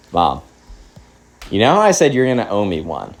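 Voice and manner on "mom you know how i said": plain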